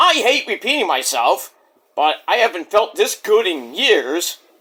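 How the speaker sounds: ordinary talk, nothing marked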